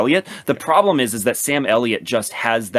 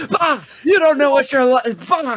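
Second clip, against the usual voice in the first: put-on very high-pitched, shrill screaming rant. Recapping a movie scene of a father screaming at the lead scientist, Thunderbolt Ross screaming. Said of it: "he's like screaming in the lead scientist's face".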